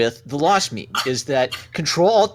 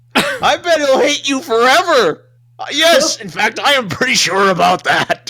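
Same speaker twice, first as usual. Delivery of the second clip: gleeful, relishing character voice, pitched high and loud; 8 semitones higher, 5 dB louder than usual. Retelling a comic scene of Mumra gossiping: Mumra impersonation. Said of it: "you guys' Mumra impersonations".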